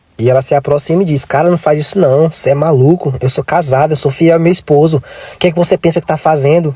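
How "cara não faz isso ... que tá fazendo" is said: ordinary talk, nothing marked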